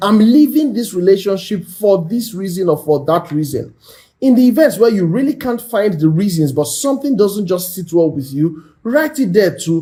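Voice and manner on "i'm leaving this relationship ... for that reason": ordinary talk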